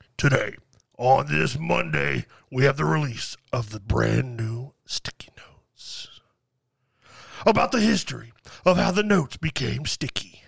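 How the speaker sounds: very low, deep cinema trailer-announcer voice. Prompted to voice a movie trailer, trying a movie trailer announcer voice. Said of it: "I tried to do an announcer voice".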